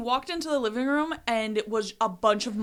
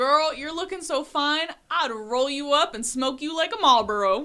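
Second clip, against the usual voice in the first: put-on broad, strong southern-accented twang; 4 semitones higher than usual. Retelling a drunk friend's pickup line: imitating a friend's southern twang. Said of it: "he said it with a very southern twang".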